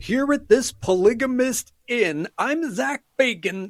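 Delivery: pitch way up, slow pace. Picturing a ghost hunting crew arriving, doing Zach Bagans impression. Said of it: "'cause that's how he talks".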